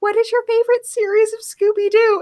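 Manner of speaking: put-on meek, small-child voice, very high. Retelling a son's question to a celebrity: imitating a meek child asking. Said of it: "my son all meekly is like".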